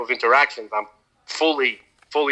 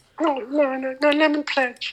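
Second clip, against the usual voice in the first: put-on cartoon character voice, higher. Joking along, doing a Japanese version of Consuela from Family Guy. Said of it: "like the Japanese Consuela".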